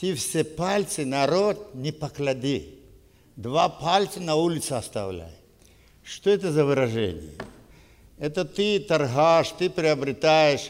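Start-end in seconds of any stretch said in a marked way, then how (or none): 0.0-5.3 put-on Russian spoken with a Tajik accent. Quoting what people used to say to each other: imitated Tajik accent. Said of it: "ну так, с акцентом с таджикским".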